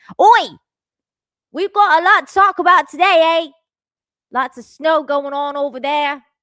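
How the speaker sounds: very loud, high, terrible fake Australian accent. A streamer greets the viewers in a bad Australian accent. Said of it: "I turned Australian".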